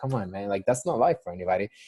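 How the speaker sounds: normal talking voice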